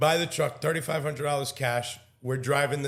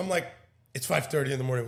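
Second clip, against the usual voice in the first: plain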